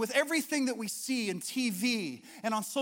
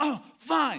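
grudging, sulky, annoyed, attitude-laden delivery; 3 semitones higher, 4 dB louder than usual. Acting out the usual reply given with attitude: mock-annoyed attitude. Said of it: "It's usually attitude".

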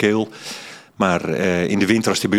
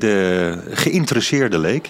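geïnteresseerde and leek both stressed, said slowly. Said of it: "Met, eh, nadruk op beide woorden".

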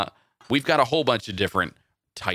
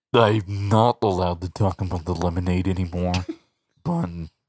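put-on stuffy, congested disguised voice, much lower pitch; 3 semitones lower than usual. On a podcast, a host riffs on lemonade ads, in a witness protection voice with a cold. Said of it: "witness protection with a cold".

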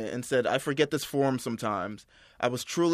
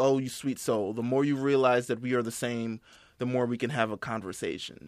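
condescending, patronizing, superior talking-down tone; 2 semitones lower, 4 dB quieter than usual. Retelling a man's tweet about a speech: imitating a condescending tone. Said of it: "in a condescending tone".

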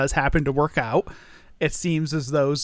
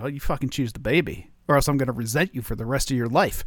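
mock-serious, acted earnest tone. Retelling how she answered his question, imitating her getting all serious. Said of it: "got all serious on me".

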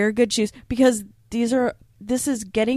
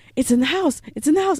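mock thrilled, high, fast excited little-kid voice; 6 semitones higher than usual. Retelling Luke spotting something in the house, imitating Luke's excited kid voice. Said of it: "He just sounded like a little kid".

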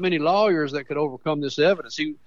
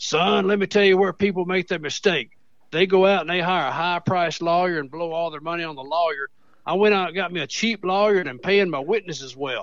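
put-on rough, gruff old man voice. Retelling what an old man said about his trial: imitating an old man's gruff voice. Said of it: "I'll do the best imitation I can".

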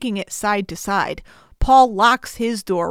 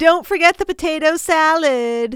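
campy, flamboyant, high voice, "salad" drawn out; 8 semitones higher than usual. Retelling how a guy calls back to another guy, flamboyant fabulous voice. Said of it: "In the most fabulous voice ever".

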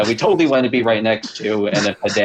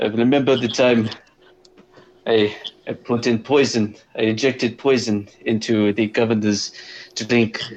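badly done put-on Russian accent. Trying a russian accent again at another speaker's request: russian accent. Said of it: "try your Russian accent again".

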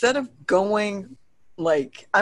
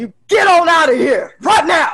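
shrill, booming, very loud, high yell, fear turning angry; 12 semitones higher, 11 dB louder than usual. Playing a character who sees a ghost at the top of the stairs, scared, getting-angry yell. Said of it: "starting to get mad and just yells".

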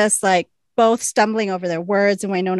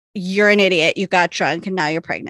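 ordinary talk, nothing marked

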